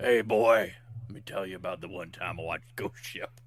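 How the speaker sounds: put-on low, grizzled old-timer old-man voice. Joking that he will sound older with age, in a grizzled old man voice. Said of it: "so I sound like a grizzled old man".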